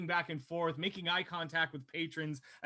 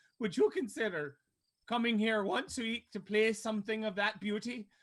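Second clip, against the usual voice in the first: pitched-up voice, choking back tears; 5 semitones higher than usual. In the bar, Sybil turns to the player, holding back weeping. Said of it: "she's saying this like holding back some some weeping".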